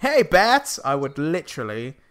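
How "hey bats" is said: very high, loud, called-out voice. Imagining Spider-Man swinging in and greeting Batman: Spider-Man voice. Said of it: "He just swings in".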